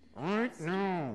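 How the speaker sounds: through gritted teeth. Explaining how a mother says it when she really means it, imitating mom through gritted teeth. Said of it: "it would be between gritted teeth".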